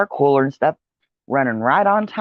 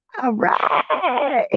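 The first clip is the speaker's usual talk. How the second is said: high, pleased laughing "all right". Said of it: "and I'm like".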